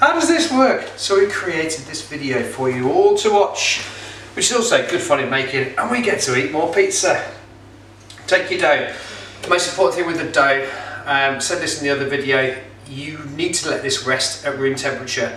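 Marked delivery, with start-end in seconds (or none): 0.0-0.8 much higher, louder, confused voice. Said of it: "They just contact in and say".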